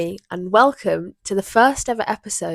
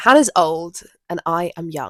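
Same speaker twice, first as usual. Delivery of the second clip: ordinary delivery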